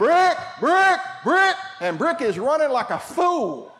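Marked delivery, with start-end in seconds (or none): 0.0-1.5 high-pitched, loud calling out. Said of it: "and he says".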